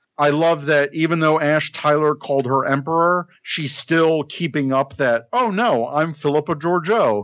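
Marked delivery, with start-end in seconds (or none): 5.3-7.3 put-on sarcastic tone. Retelling how a character answers being called Emperor: imitating a sarcastic retort. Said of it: "in, like, a sarcastic way".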